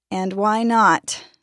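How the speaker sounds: tired voice. A mother calls her daughter back and questions her, asking tiredly. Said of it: "the mother asked tiredly".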